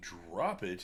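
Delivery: normal talking voice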